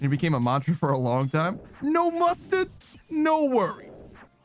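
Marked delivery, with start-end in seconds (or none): 1.8-4.2 put-on very high, very drawn-out, slow, heavy New Jersey accent. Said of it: "the most Jersey accent you could ever heard".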